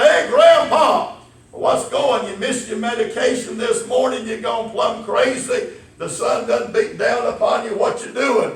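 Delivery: mock sarcastic ribbing, high-pitched teasing. Retelling how men at a country store teased an old man: imitating sarcastic teasing. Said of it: "they can be a little bit on the sarcastic side".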